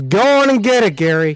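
high, encouraging cheering yell like a coach. Retelling what a coach yells as he rides past: imitating a coach yelling. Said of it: "she yells".

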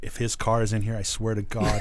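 ordinary talk

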